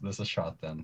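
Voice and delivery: ordinary talk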